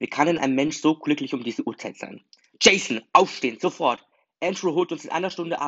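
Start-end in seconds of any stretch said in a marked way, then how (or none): 2.6-5.7 high, even louder yelling. A woman wakes the sleeping narrator, shouting even louder. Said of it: "schrie sie noch lauter".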